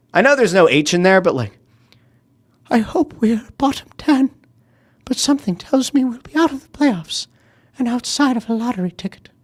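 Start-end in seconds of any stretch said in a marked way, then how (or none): 2.7-9.2 pitched-up cartoon bear voice. Reading a viewer's comment aloud: Winnie the Pooh voice. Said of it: "read this like Winnie the Pooh".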